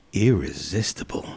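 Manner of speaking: put-on New Zealand accent, very low and soft. Telling a joke to the group, delivering the punchline in a put-on accent. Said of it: "I'm going to do this one in an accent".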